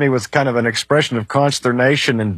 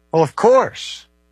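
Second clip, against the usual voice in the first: sly, teasing, playful and mischievous, pitched up; 5 semitones higher than usual. Giving a standard reply to a question about reading the bible literally: mischievous smile in voice. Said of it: "You can hear the mischievous smile in his voice".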